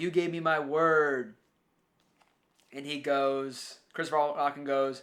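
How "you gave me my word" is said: mock half-yelled, stretched-out word. Retelling a film scene where Andy Garcia yells: imitating Andy Garcia yelling. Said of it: "Andy Garcia's yelling at him".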